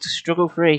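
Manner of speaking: ordinary delivery, nothing marked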